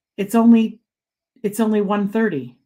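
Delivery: ordinary delivery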